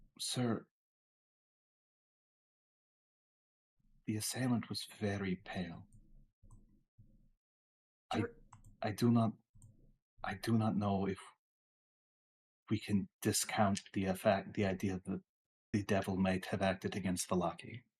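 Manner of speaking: low, hushed, confiding half-whisper, in character. Playing a character, leaning closer to half-whisper a report into his ear: half-whispering. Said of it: "I lower my voice and I whisper into his ear".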